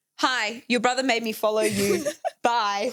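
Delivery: put-on snippy tone. A woman reads out a message she received, in a mock-curt bitchy tone. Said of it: "that sounds so bitchy. I didn't say it like that".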